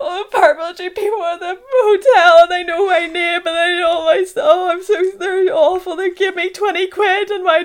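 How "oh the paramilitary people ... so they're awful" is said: mock high, loud, tearful sobbing. Telling how the speaker came home to the parents: retelling own crying. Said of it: "came home crying like to my parents".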